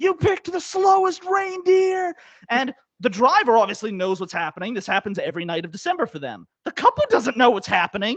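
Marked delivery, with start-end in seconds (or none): 0.0-2.1 play-acted, very high-pitched, drawn-out shrieking. Retelling how the driver screamed at a slow carriage: imitating a driver screaming.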